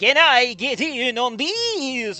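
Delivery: very slow, loud vampire drawl, long this. Showing the others how the line should be said, vampire voice. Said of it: "You gotta say it like a vampire".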